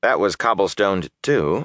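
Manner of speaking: ordinary delivery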